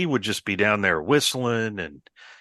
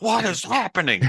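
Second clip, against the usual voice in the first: mock furious outburst, very high-pitched; 11 semitones higher than usual. Retelling a prank story, quoting the victim: imitating a furious outburst. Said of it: "he got more furious".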